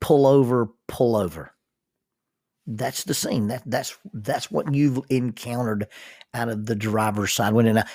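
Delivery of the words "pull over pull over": ordinary delivery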